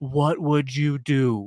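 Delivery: very serious, slow, dead-earnest delivery. Quoting the question a podcaster always asks: imitating Daryl Cooper's super serious tone. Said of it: "super serious tone".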